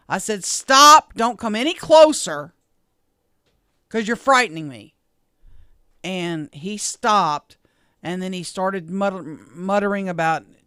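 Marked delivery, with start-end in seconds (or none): 0.4-4.9 mock firm, loud, stern mean-mom voice. Retelling what she said to a man walking toward her, in her mean mom voice. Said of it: "my mean mom voice".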